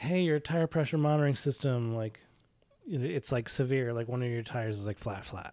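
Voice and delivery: ordinary talk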